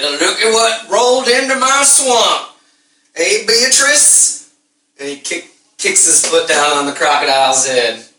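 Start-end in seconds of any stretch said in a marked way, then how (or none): 0.0-4.4 high-pitched hillbilly voice. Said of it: "It's a hillbilly tow truck".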